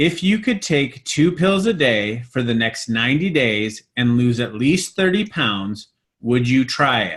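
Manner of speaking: slow, measured, deliberate, unhurried reading. Rereading the question for audience members who are writing, slower reading. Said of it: "read that again slower".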